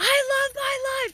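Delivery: very high, very slow, shrill, drawn-out shout. Recalling shouting declarations in the dog park, retelling a shout. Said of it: "I was just shouting out".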